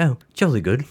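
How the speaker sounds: put-on British accent. Imagining someone popping up in a religion discussion, the speaker mimics them: mock British accent. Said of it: "yelling at you in British".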